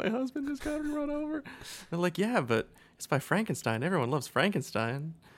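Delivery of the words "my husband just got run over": mock crying through sobs, very high pitch. Recounting a movie scene, imitating someone sobbing. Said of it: "she's like fucking sobbing and going like".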